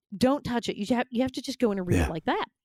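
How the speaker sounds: ordinary talk, nothing marked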